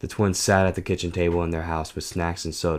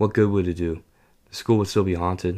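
plain

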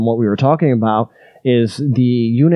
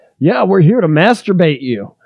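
put-on, sudden, high, swooping hollered outburst; 6 semitones higher, 3 dB louder than usual. Retelling a friend's line to people passing in the hallway: imitating a friend yelling. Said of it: "my buddy just yells".

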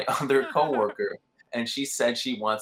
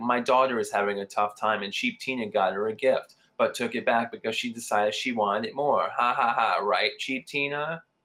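normal talking voice

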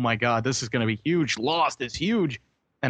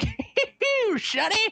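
put-on very high, squeezed-up old-miner voice. Mocking a bad sound-alike from a game video, old miner voice. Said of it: "they made him sound like an old miner".

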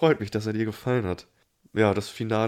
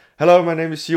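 very loud, pitched-up announcing voice; 7 semitones higher, 9 dB louder than usual. Retelling the IT guy's third try at introducing himself, really loud. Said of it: "erst beim dritten Mal fängt er an, wirklich so laut zu sprechen".

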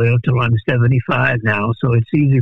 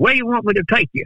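put-on Texan accent, pitched way up high; 9 semitones higher than usual. Retelling what the man pointing the gun said, in a Texas accent impression. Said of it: "this is my best impression of a Texas accent".

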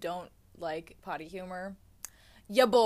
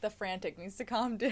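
usual speaking voice

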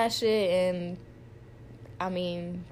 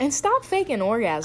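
ordinary talk, nothing marked

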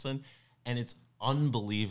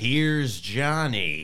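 very loud, intense, full-out belting shout; 3 semitones higher, 9 dB louder than usual. Showing off a practised impression of an intense actor: Jack Nicholson impression. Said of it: "I've really been working on my Jack Nicholson".

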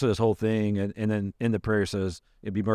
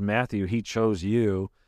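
normal talking voice

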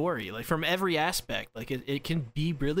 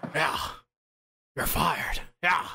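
put-on disgruntled old man's voice. Imitating an anime writer as if he were Vince McMahon: Vince McMahon voice. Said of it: "That's Vince McMahon".

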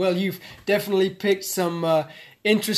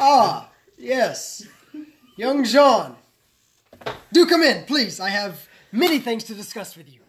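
loud, glad, delighted tone; 3 semitones higher, 5 dB louder than usual. Game master voicing a character who sees Jean enter, delighted welcome. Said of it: "his eyes brighten and his face lights up".

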